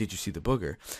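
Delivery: soft, hushed, secretive half-whisper. Retelling quietly asking a friend about something in the bathroom: imitating own past half-whisper. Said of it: "So I went up to him and I whispered".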